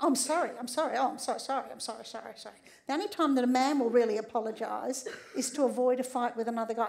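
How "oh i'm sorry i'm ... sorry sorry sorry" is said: mock over-apologetic, gushing tone. Acting out how women apologise for everything: imitating women over-apologising. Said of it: "Women apologise for breathing".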